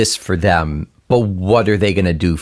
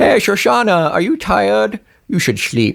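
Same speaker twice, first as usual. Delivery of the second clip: very high, put-on Dutch accent; 12 semitones higher than usual. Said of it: "it's a Dutch accent".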